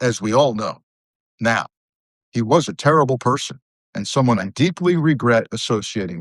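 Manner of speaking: ordinary delivery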